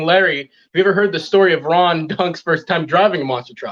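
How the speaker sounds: usual speaking voice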